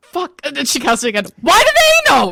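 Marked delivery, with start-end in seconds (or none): 1.4-2.4 very loud, very high-pitched internal-sounding scream. A character casting a message into someone's head again, really loud shout. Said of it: "Really loud in your head".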